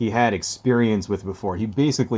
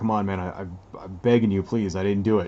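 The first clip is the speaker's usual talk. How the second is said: acted pleading voice, near tears. Retelling how a man about to be arrested begged, imitating tearful pleading. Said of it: "on the verge of, like, tears".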